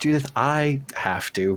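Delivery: half-whispered private aside, leaning back. Leaning back to answer judith in character: half-whispering. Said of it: "I'll lean back and whisper".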